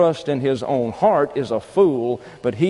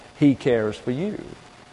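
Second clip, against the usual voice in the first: ordinary delivery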